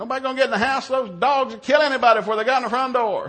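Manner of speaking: loud, high-pitched yelling.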